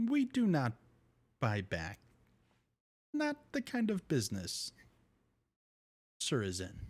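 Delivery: swooping robot droid character voice. Narrating the scene, the speaker voices a protocol droid answering you: protocol droid voice. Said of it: "the protocol droid looks at you and says".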